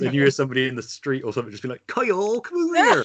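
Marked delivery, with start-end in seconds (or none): 1.9-3.0 put-on Gloucester accent, pitched very high. Quoting a stranger in the street calling someone over, in a Gloucester accent. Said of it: "heard it said in a Gloucester accent".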